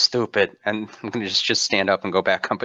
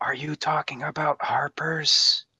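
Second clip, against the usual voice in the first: loud, slow, failed whisper; 6 semitones higher, 4 dB quieter than usual. Leaning in to whisper a question in character: loud failed whisper. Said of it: "you're not a very good whisperer".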